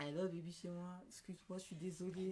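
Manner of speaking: low, soft, sugary, syrupy honeyed voice. Retelling how someone calls back later, in a put-on honeyed voice. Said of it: "il vous appelle avec une voix mielleuse".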